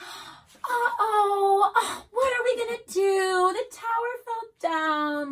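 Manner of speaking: very high, very loud, very helpless tone. Showing how an adult might react when a child's tower falls, in a very helpless tone. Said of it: "like a very helpless type tone".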